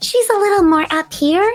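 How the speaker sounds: very high character voice. Describing the character she voices on a show, in a very high voice. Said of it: "she has a very high voice".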